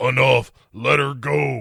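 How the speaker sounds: demon voice, rough and creaky. Recapping a Ghost Rider scene, speaker delivers Danny's line in a kind of demon voice. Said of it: "in a kind of a demon voice says".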